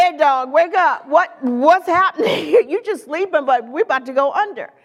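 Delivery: mock panicked voice, casual and slangy. Retelling the disciples waking Jesus in the storm: casual slangy retelling of panicked disciples. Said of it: "I would have said".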